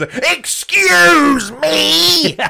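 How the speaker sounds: as angry as possible. Trying out how angry the words can sound with a co-speaker: as angry as possible. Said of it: "say "excuse me" as angry as we can".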